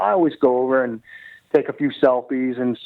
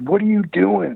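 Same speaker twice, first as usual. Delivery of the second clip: mock furious outburst, screamed high-pitched and harsh; 7 semitones higher than usual. Retelling a publicist running over about fan photos: imitating someone screaming. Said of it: "he's screaming at me".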